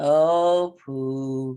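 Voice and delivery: low, flat, gloomy donkey monotone, drawn-out oh. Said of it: "tone of voice is very monotone".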